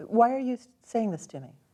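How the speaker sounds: ordinary talk, nothing marked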